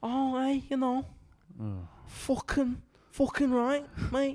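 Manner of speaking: put-on Scouse accent. Introducing a bit called Scouse Toy Story, speaker does a mock Scouse accent. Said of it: "It's just going to be".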